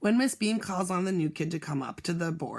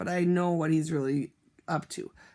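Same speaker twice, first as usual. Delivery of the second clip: ordinary delivery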